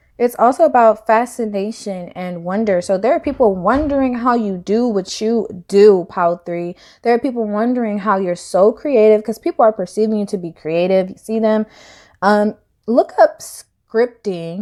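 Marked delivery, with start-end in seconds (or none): 12.2-14.7 voice cracking and breaking mid-phrase. Speaker giving a reading to a listener; voice cracking. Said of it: "my voice just cracked right there".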